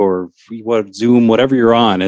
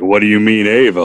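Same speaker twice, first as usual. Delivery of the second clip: put-on huge dog character voice. In bed, the speaker voices their giant dog's reaction in a giant dog voice. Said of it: "that's my dog voice for him because he's giant".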